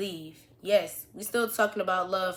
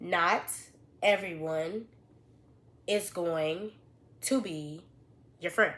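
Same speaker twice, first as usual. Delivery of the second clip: slow, drawn out, halting, deliberate, broken into pieces. Repeating advice about friends in sophomore year: slowly. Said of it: "let me say this slowly".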